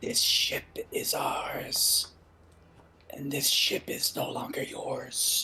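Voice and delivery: speaking in a whisper. Speaking in character into his ear during combat: whispering. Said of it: "to whisper to him and say".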